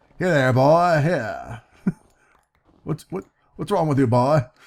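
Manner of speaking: cartoonish rooster-like voice. Showing the road on camera, speaking in a Foghorn Leghorn voice. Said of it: "Get my foghorn leghorn on here".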